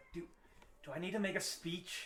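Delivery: anxious, soft, hushed whisper. Voicing a nervous winner asking the announcer privately: whispering nervously in character. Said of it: "whisper at him".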